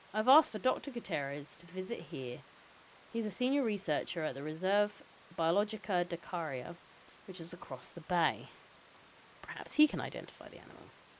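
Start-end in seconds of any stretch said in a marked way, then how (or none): none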